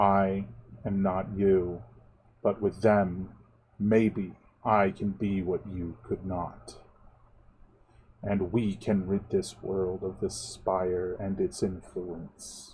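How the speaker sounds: firm, unwavering, flat monotone. Narrator voicing the whistler at sunset; firm monotone voice. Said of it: "speaking again in a firm, monotone voice".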